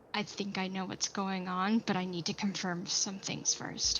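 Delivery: secretive stage whisper, in character. Whispering to another character once the visitor is out of earshot: whispering in character. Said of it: "just, like, whisper to Brim".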